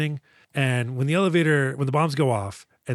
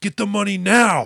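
mock panicky, urgent yell, high and rough; 7 semitones higher, 4 dB louder than usual. Retelling a movie scene where a character yells into a phone: imitating Joe Morton yelling. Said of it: "yelling into a phone".

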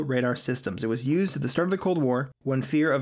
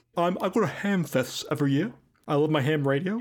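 put-on ham radio operator voice; 3 semitones higher than usual. Impersonating the man who talks about radios: Preston Nichols impression. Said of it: "within my range of voices I can impersonate".

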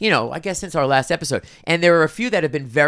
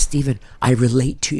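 acted-out whisper, lower; 4 semitones lower than usual. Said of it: "don't whisper it".

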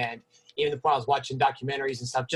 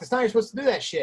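put-on angry scolding tone, pitched very high; 9 semitones higher than usual. Retelling how they corrected a trainee, imitating acting mad at him. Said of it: "acting like I was mad at him".

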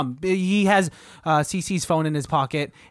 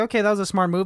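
ordinary talk

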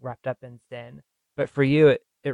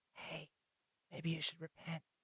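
very soft, breathy whisper under the breath; 5 semitones higher, 20 dB quieter than usual. Retelling a reluctant prophet's message in the streets: imitating someone whispering. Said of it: "whispering in the streets of Nineveh".

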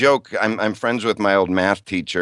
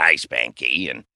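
put-on low, croaky kid voice; 6 semitones lower than usual. Recalling an old Little Rascals character for the listeners: Froggy voice. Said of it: "he talked like this".

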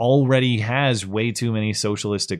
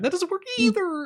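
voice pushed to a very high pitch. Asked to say it the way he said it: imitating his high voice. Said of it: "I can't get my voice that high".

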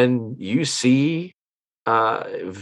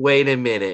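ordinary talk

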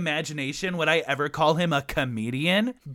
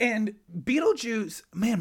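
cracking, pitched-up voice; 5 semitones higher than usual. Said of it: "my voice is cracking like I'm twelve".

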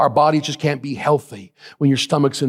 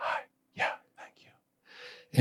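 very quiet, very slow, weak, drawn-out whisper. Retelling a dying man's words at his bedside: imitating a weak whisper. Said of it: "He would just kinda whisper".

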